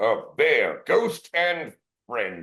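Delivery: slow, small goblin clerk voice. A small goblin clerk greeting a recruit and a bear, in a goblin clerk voice.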